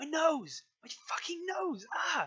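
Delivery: very high, shrill, loud screams of agony. Voicing a character whose nose is pinched during an interrogation: screaming in pain. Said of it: "He just screams like".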